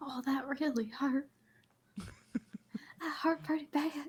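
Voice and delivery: soft, hushed whisper under the breath. A game character hurt after a long fall on a rope, whispering. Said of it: "And I'm still whispering".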